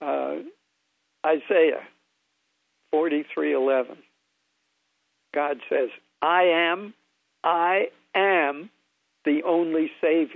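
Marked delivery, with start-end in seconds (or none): 6.2-10.4 slow, determined, emphatic "I am" with attitude. Showing how God's "I am" sounds after being asked: "I am" with an attitude. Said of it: "say it with that attitude".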